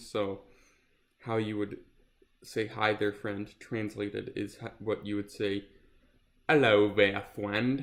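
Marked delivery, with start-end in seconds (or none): 6.5-7.8 speaking with British accent. Speaker showing how a greeting is said in British, saying it in British. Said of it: "that's how you say that in British".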